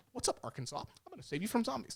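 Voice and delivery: grating, annoying actor voice. Quoting the actor's movie line to mock his voice: Jesse Eisenberg impression. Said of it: "this guy's like".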